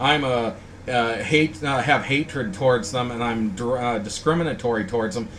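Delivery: ordinary talk, nothing marked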